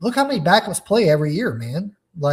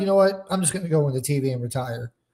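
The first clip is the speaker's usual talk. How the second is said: ordinary talk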